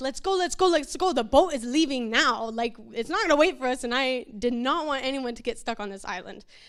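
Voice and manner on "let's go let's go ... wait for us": ordinary talk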